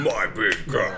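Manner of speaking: deep arena announcer voice with reverb. Retelling the first words when launching a Fiverr gig, Quake announcer voice. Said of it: "in the Quake style announcer voice with the reverb".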